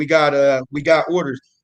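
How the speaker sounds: normal talking voice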